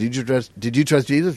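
ordinary talk

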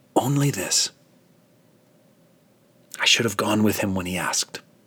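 whispered words. Narrator reads a dying old man's final words: whisper. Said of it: "He whispers".

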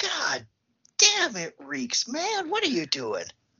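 mock very high, wildly swinging shout. Retelling the sheriff's reaction to the smell; imitating someone shouting. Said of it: "he's just shouting".

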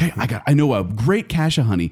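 ordinary delivery

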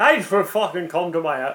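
rough, attempted put-on Irish accent. Doing a put-on voice during a quiz: attempted irish accent. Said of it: "that's Irish".

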